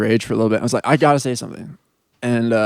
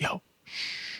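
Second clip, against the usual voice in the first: mock gentle, friendly whisper. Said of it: "Trying to be, like, nice about it".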